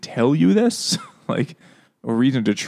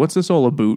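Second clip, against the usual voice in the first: put-on Canadian accent, faster. Recapping a story where the heroes meet Henry Baskerville, silly Canadian accent. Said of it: "he has a silly Canadian accent".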